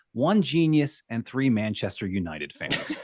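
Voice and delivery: ordinary talk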